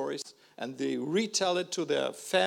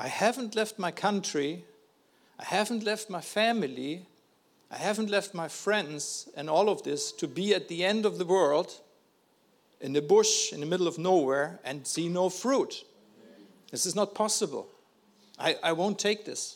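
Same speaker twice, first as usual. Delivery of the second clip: plain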